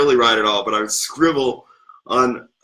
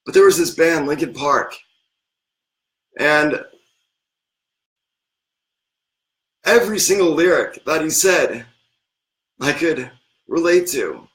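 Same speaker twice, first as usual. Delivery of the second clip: choked-up voice catching with emotion; 4 semitones higher than usual. Talking about a band that helped them through lonely times, choking up. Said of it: "I'm kind of choking up".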